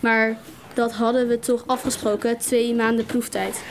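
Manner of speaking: ordinary delivery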